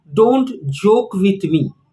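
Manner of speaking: ordinary talk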